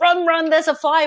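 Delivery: fast, urgent, emotional voice. Showing how to warn the family about a fire: quick, with a lot of emotion. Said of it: "with a lot of emotion".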